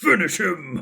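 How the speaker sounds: put-on game announcer voice. Naming the game line that suits their voice: finish him announcer voice. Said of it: "the vocal lines to be able to be like".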